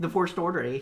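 high, loud, bad mock Canadian accent.

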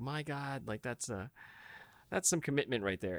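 ordinary talk

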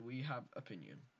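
normal talking voice

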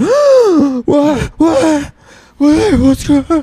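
mock panicked freak-out. Retelling a partner waking up startled: imitating a panicked wake-up. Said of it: "freaked out again".

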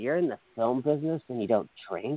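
hushed, secretive stage whisper under the breath. Retelling what a drunk man said to the speaker: imitating a half-whisper. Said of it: "he whispered to me".

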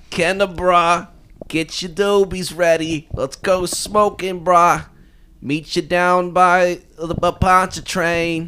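put-on high-pitched, easygoing, laid-back stoner-dude voice. Speaker improvises a character the others call a kenner stoner: kenner stoner voice. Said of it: "That's like Kenner stoner".

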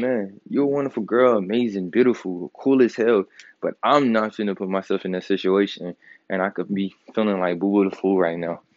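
ordinary delivery

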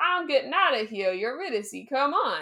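put-on excited outburst, bursting eagerness, swooping pitch. Retelling a myth, acting out the hero seeing light ahead: acting out an excited character. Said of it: "he gets so excited".

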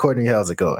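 normal talking voice

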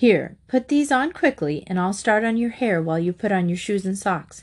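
ordinary delivery

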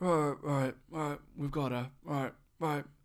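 rough, gravelly voice. Retelling a creepy voicemail message, imitating the gravelly voice on it. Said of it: "sort of gravelly sort of voice".

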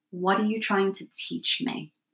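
normal talking voice

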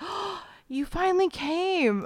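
very high, very slow, drawn-out, super excited. Retelling a meme where a girl greets a vampire: imitating a super excited girl. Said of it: "is, like, super excited".

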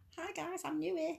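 very high, put-on Scouse accent. Reading out someone's post to the other speaker, in an attempted Scouse accent. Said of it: "I'll try and be more Scouse".

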